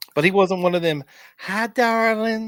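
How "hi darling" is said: affected, high, put-on feminine voice. Illustrating a kind of speaker the man described was not: put-on feminine voice. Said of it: "in a feminine voice".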